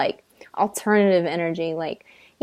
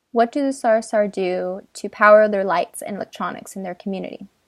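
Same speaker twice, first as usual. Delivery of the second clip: ordinary delivery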